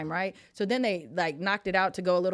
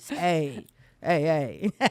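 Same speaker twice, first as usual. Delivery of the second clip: put-on sexy voice, lower; 3 semitones lower, 4 dB louder than usual. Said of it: "It's that sexy voice".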